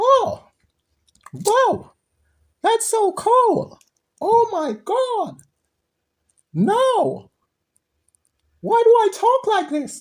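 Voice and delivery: very high, squeaky cartoon-mouse voice. Reacting after smoking a joint that changed the voice: sounding like Mickey Mouse. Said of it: "I sound like Mickey Mouse".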